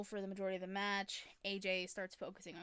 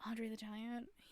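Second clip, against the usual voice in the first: put-on whisper under the breath, quieter; 2 semitones higher, 4 dB quieter than usual. Retelling a wrestler's quiz answer into the microphone: imitating a whisper. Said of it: "whispers it under, under his breath".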